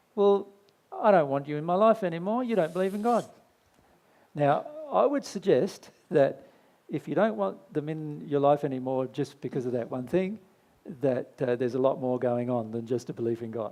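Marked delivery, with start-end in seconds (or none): 0.2-3.3 put-on, pitched-up, snooty, condescending tone. Imitating people who reject a partner over belief in God: condescending tone. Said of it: "they go almost condescendingly".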